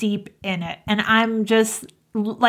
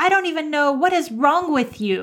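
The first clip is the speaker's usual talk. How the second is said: mock fed-up, exasperated screaming rant; 5 semitones higher than usual. Retelling his outburst after a missed exit: imitating someone screaming. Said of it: "he just starts screaming at me".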